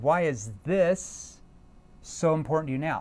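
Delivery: short pause, then leaning hard on "this". Showing verbal pauses in a question, stress on this after pause. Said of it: "what word am I keen on? The word this".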